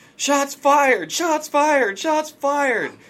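very high, loud scream, repeated. Retelling a man who pulls his gun and screams, retelling a scream. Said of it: "He screams".

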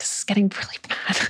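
soft, unvoiced whisper.

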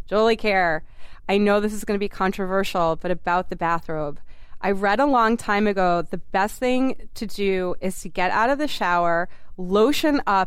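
ordinary talk

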